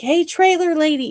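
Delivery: mock loud, high-pitched holler. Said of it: "she really did holler at some".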